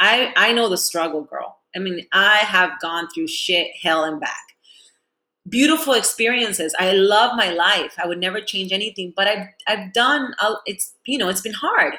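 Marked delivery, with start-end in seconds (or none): none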